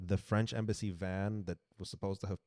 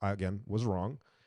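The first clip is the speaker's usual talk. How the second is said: ordinary talk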